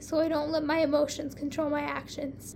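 plain reading voice

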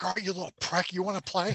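put-on villain scream. Imagining what a villain should have said, imitating Vader screaming. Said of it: "He should have screamed at him".

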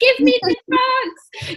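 shrill, booming, high, drawn-out scream. Retelling what women in labour cry out at the birth: imitating someone screaming. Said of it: "they're screaming".

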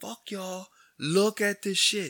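shrill, very high, loud screaming. Looking out his window at honking people, retelling screaming. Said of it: "I'm fucking screaming".

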